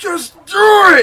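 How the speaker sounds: all-out, very loud, shrill scream. Retelling a motivational speech recorded in front of a green screen: imitating Shia LaBeouf screaming. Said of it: "he's screaming".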